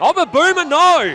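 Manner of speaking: high, loud, shocked outburst.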